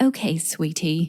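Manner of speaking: put-on, clumsy, mangled English accent. Quoting a dear friend's message from England, imitating Carol's English accent. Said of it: "a really great, beautiful English accent, and I'm butchering it".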